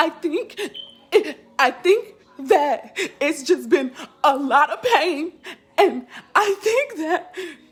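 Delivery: mock crying, high, slow and drawn out. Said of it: "I'm crying because of all of it".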